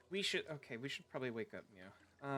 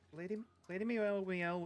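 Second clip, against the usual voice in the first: stumbling, stuttering, raised and pitched-up speech; 7 semitones higher, 4 dB louder than usual. Answering a question and stumbling on someone's name, stuttering. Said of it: "sorry, I'm stuttering".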